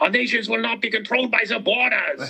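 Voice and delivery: put-on angry German accent. Showing a joke that mocks two German accents: angry German accent.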